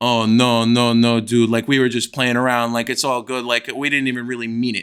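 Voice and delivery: put-on low, nervous, placating, weaselly kid voice. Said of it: "he's like".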